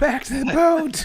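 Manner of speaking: mock yelling. Recounting a game scene to a friend, repeating the shouted order to retreat, in a retold yell. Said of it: "I yell".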